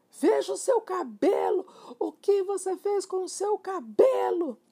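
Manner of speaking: piercing, very high, shrill cry. A wife cries out to her husband, shrill exclamation. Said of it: "exclamou com a voz estridente".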